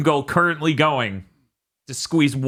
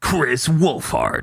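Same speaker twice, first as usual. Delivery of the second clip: radio DJ on-air announcer delivery. Saying a name aloud in a put-on radio dj voice. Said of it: "this is the radio D J voice every time".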